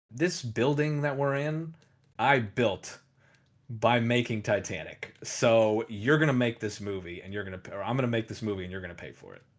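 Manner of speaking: plain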